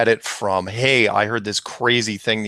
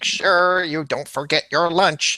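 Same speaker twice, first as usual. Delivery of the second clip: put-on motherly voice, pitched up and carefully proper; 8 semitones higher than usual. Recalling how their mom pronounced things, doing a Coneheads mom voice. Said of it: "like something the Coneheads mom would say ... My mom didn't sound like that".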